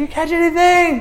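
very high, far-carrying yell. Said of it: "this guy yelling at them".

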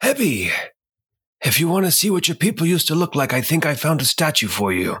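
loud, theatrical stage whisper. Player voicing a character whispering back into the hall to a companion, stage whisper. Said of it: "kind of a stage whisper".

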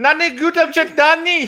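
exaggerated fake Indian accent. Imitating what he says when he pulls up, shitty Indian accent. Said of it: "full Indian shitty accent".

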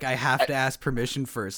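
plain

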